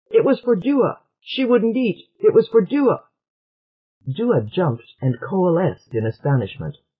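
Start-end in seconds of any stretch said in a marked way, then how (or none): 0.1-3.0 sudden, high-pitched blurted outburst. Trit, questioned by a Hard One about the food he took, answers by bursting out. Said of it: "And Trit burst out".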